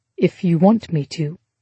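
ordinary delivery, nothing marked

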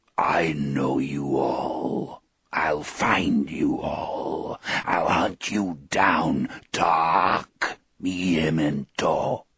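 very low, slow, dragging, grinding inhuman monster voice. Reading the eyeless thing's threat to the group in a grinding, inhuman voice. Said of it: "in a grinding, inhuman voice".

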